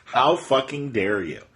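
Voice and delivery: ordinary talk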